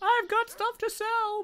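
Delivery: mock shrill, high, all-out top-of-the-lungs shout. Mocking a stupid voiced line, imitating someone shouting at the top of their lungs. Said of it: "imagine someone just shouting at the top of their lungs".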